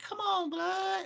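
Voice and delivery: put-on very high, squeaky, unbroken boy's voice. Imitating a younger kid from the neighborhood: imitating a high-pitched young voice. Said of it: "that high-ass voice where his nuts ain't dropped".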